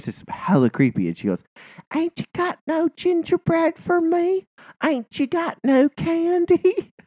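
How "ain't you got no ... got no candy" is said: put-on tiny little-bitty kid voice, very high. Retelling a child knocking at the door, imitating a little kid voice. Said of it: "she does this little kid voice".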